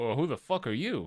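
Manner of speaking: rough, tough, menacing and mean bandit voice. Voicing a bandit who finds the group at the door: rough, mean bandit voice. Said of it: "he looks at you guys, is like".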